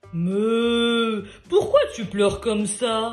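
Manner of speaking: heavy, deep storybook voice, drawn-out "mais". Narrator reading a story, voicing someone speaking to the crying guitar, big deep voice. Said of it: "demande une grosse voix".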